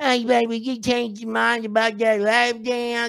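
high-pitched mumble as if through missing teeth. Retelling a woman who comes back hours later; imitating Cricket's toothless mumble. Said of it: "through her missing teeth".

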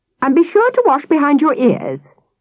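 high, swooping, fussy cry. Narrating a mother's parting words as her son boards the bus, mother crying out.

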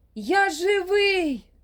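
very high, loud, despairing shriek. Yehor, being buried alive, cries out to those above, despairing shriek. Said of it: "розпачливо заверещав Єгор".

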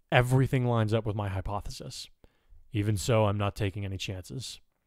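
ordinary delivery, nothing marked

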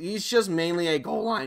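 voice cracking. Speaker going over a player's ratings, voice cracking mid-sentence. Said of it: "bit of a voice crack there".

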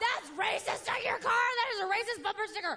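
high-pitched scream.

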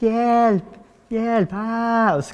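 put-on high-pitched scream of a small child. Retelling hearing a child call for help below, imitating a child screaming. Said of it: "Och skrek".

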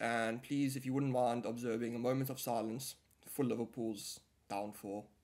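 ordinary talk, nothing marked

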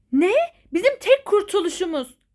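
high, loud, alarmed, disbelieving startled shout. In a drama, a mother reacts to her daughter's news that Aylin was committed: shouting. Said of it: "Anne ne bağırıyorsun ya?".

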